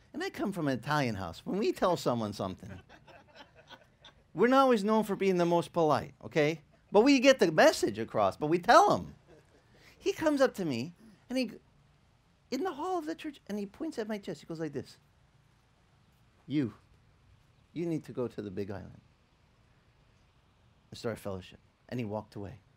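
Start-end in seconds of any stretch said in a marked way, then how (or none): 16.5-21.6 soft-spoken and much quieter. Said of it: "He's got this real soft-spoken manner".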